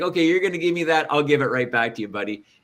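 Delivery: mock sarcastic, fast. Retelling a comment made right back to an obstinate student: mock-sarcastic retort. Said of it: "very sarcastic, very snarky comment".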